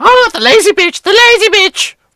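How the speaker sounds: high-pitched parrot squawk heard from a distance. Voicing a parrot calling out from the distance: parrot voice calling out. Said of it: "you hear a voice".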